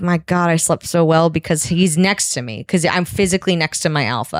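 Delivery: ordinary delivery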